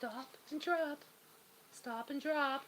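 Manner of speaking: small, soft, slow little voice. Telling Bella to stop and drop the ball, in a little voice. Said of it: "my little voice".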